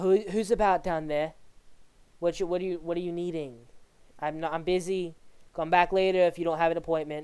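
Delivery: tinny intercom-speaker voice, tripping over words. Voicing Astrid answering a knock over a door camera: Astrid's voice through a doorbell intercom. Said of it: "Astrid's voice, like, out of a Ring camera monitor".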